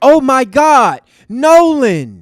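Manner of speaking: mild, very slow, long-stretched mock girl scream. Acting out how a girl on a boat yelled in the audio, imitating a girl screaming. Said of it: "she's yelling because she's having a good time and she's screaming".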